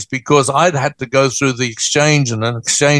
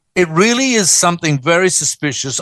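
plain

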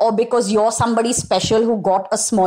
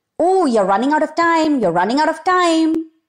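high, panicky, frantic, irrational nagging inner voice; 6 semitones higher than usual. A coach imitates the irrational voice in your head, mock screaming inner voice. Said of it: "that irrational voice in your head that's constantly screaming".

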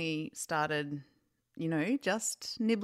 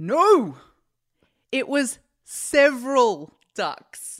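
high, very loud, triumphant shout; 7 semitones higher, 12 dB louder than usual. Retelling how she suddenly shouted out while you both worked, retelling a triumphant shout. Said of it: "she shouts out triumphantly".

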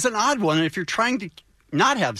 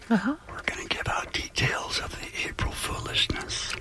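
hushed whisper; 7 dB quieter than usual. On a morning radio show, a host announces upcoming details, whispering. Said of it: "Why are you whispering?".

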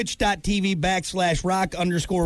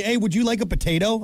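normal talking voice

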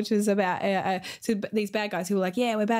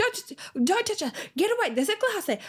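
put-on, very high-pitched screamed shouting; 13 semitones higher than usual. Retelling warning her kids away from broken glass: imitating screaming at kids. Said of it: "screaming at our kids".

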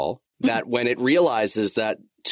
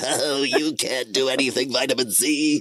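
put-on slow cartoon villain drawl; 4 semitones higher than usual. Voicing a cholesterol villain taunting vitamin C: cartoon villain voice. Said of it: "with the word cholesterol over his chest going".

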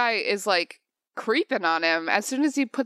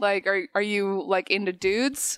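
usual speaking voice

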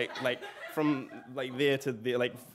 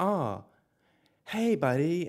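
acted-out sing-song patronizing baby talk, talking down; 4 semitones higher, 3 dB louder than usual. Retelling how an instructor greeted them, mimicking patronizing baby talk. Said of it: "talking to me kind of like I was a baby, like very sort of patronizingly".

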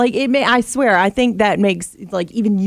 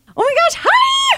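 put-on high cooing baby voice. Showing another person how to do baby talk, high-pitched baby talk. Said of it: "you do your baby talk".

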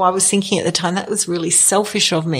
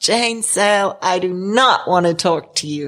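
put-on American accent. Retelling a doctor's joking phone call, Larry's American accent. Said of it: "he's got an American accent".

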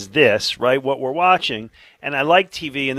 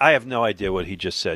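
usual speaking voice

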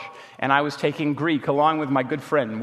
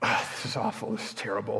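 hushed, breathy, whispered muttering; 4 semitones lower, 8 dB quieter than usual. Retelling a friend's visit to the dorm: imitating Will muttering to himself. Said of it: "That's what he muttered to himself".

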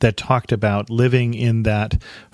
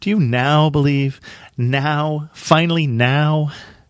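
mock fed-up exasperation, pitched up; 5 semitones higher than usual. Teaching on a chapter, the speaker quotes his reply with mock exasperation. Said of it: "I can just hear the exasperation".

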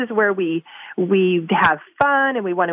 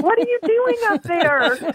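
very high, frustrated, pitched-up shout; 12 semitones higher than usual. Retelling calling up to someone with no response: imitating own past yelling. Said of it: "I'm probably yelling underneath".

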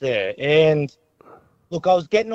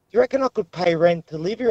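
ordinary talk, nothing marked

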